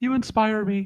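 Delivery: high, adoring, worshipful admirer voice. Mocking the people who follow someone like this: mocking imitation of followers. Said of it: "That's how I think they sound".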